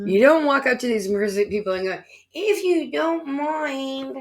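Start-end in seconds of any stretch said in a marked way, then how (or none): 2.3-4.2 meek, timid, high, very slow, drawn out. Showing the wrong way to ask the entities: weak, timid request. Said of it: "if they think you're weak".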